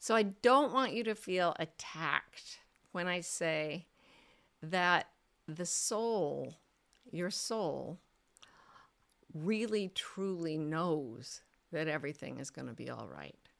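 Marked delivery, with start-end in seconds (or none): 4.6-13.3 slow, unhurried, low voice, drawn out. Answering someone's question written from pain, in a slowed, lowered voice. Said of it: "I'm going to slow down my voice and lower my vocal tone".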